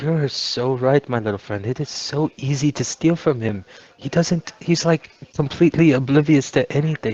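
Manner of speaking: whispering. Voicing a character who confides to a new friend: whispering in character. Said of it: "I kinda whispered to her".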